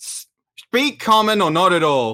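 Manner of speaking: curt delivery in a character voice. Answering someone who shouted through a door: in-character shout back. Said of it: "I'm gonna shout back in Griffin".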